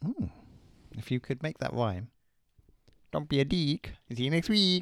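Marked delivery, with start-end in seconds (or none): 3.1-4.8 comic, funny, put-on Mexican accent. Repeating a sign-off line in a funny Mexican accent. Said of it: "Like doing a funny Mexican accent".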